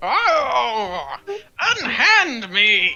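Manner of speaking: disgruntled, objecting tone with drawn-out oh. Voicing a shoved demon pinned to the floor: disgruntled demon protesting. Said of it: "a disgruntled noise, like".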